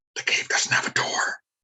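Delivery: hushed half-whisper. Player as Zoe, leaning over to Megan in a cave: kind of whispering. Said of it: "kind of whispers to Megan".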